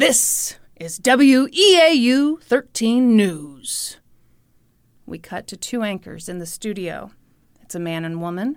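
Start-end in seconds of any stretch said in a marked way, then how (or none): 0.0-4.0 very slow, booming station announcer voice-over. Describing a local news show intro: imitating a booming announcer voice. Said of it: "And the booming voice says".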